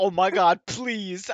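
very slow, loud, drawn-out, frantic, desperate tone. Retelling a friend begging zombies to let go: imitating frantic begging. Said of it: "He's like".

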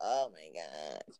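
low, slow, soft, exasperated groan. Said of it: "I'm like".

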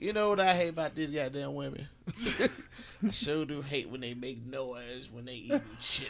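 put-on soft, grouchy, cranky old-man voice.

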